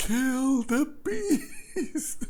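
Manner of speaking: very high, slow, long drawn-out scream.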